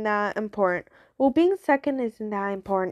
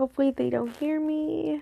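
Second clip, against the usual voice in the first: hushed, whispered speech; 4 semitones higher, 4 dB quieter than usual. Hoping they don't hear, the speaker talks in a whisper. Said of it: "I forgot I have to whisper".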